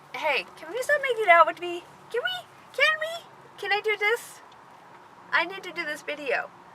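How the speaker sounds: high, coaxing pet-talk voice.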